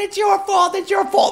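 shrill, very high yelling and screaming. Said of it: "her yelling and screaming".

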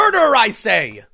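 loud yell straight into the microphone. Reacting to a murder accusation over a treatment, yelling into the microphone.

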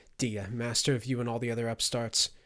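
plain reading voice

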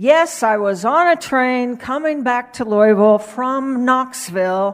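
very loud, high-pitched preacher's declaration. Retelling a preacher repeating a line from his sermon; louder voice. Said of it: "he said in a louder voice".

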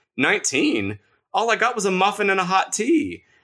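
put-on small old woman voice, very high, sweet, protesting. Narrator reads a small old woman answering the cashier, sweet-voiced protest. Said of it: "the small old woman protested in a sweet voice".

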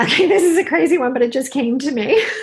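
words bubbling through laughter. Answering a request for a motivational takeaway, laughing while talking. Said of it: "I'm laughing".

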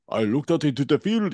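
put-on Russian or German accent. Acting out a foreign witness describing a sighting: put-on russian or german accent. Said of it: "Do you like my, did you like my impression?".

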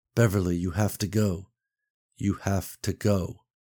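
calm, level voice. Reading a story aloud, the husband speaks to his wife, calm and even tone. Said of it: "[name] said. / Get our son out of here, / but spoke in a calm and even tone".

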